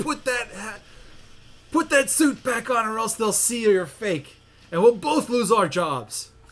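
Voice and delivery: loud, really gruff yelling lion voice. Retelling a story where the lion yells at the man in the gorilla suit, gruff lion voice. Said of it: "in a really gruff voice".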